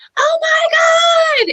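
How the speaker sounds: mock very high, loud shriek, "my" drawn out. Retelling a message read in a back room, retelling a scream. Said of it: "And I just screamed".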